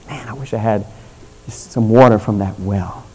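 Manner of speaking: quiet, low, soft murmur under the breath. Storyteller retells how David, the king, spoke quietly to himself. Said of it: "he says quietly to himself this".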